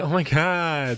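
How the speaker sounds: slow, high, flattered gushing.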